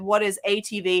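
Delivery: normal talking voice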